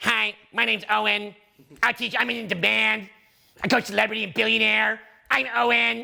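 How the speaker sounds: slow, mocking, teasing put-on voice. Showing how others could tease the speaker's value: mocking, teasing imitation. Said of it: "you can take my value and you can tease it".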